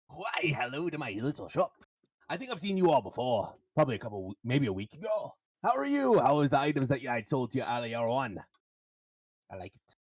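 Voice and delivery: loud, booming goblin shopkeeper voice. Narrating a game, voicing the goblin behind the magic shop counter, goblin shopkeeper voice. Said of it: "there is um a goblin standing behind the counter".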